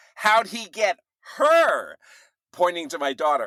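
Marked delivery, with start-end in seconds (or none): 0.2-2.0 put-on girl's shouting voice, higher. Retelling how a girl in a group shouted to her friends: imitating a girl shouting. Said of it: "one of the girls shouts to her friends".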